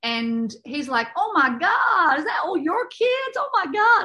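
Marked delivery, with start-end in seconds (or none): 1.2-4.1 very high, clumsy fake American accent, slow. Retelling meeting an American man at a restaurant, doing a bad American accent. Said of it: "Sorry, my American accent is really shit".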